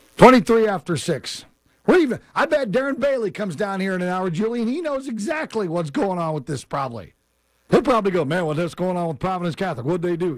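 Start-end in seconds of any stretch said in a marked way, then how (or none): 8.2-10.4 put-on cowboy-style southern US accent. Radio host imagining what Darren Bailey will say, Darren Bailey impression, cowboy. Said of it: "I tried to sound like a cowboy there".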